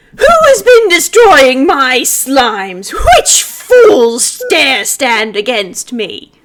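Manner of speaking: resounding, very loud, booming voice. Narrating to the players, voicing an unseen figure nearby, booming voice. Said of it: "you hear a booming voice".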